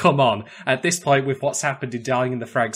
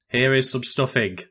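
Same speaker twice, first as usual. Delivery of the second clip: mock dead serious, flat, zero joy. Describing a man in a Santa beard and hat, retelling joyless deadpan. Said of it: "Total like no joy".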